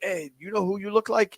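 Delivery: bad put-on Caribbean accent. Retelling a cab driver in the Virgin Islands asking who the speaker resembles, bad Caribbean accent. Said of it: "I know that's a terrible Caribbean accent".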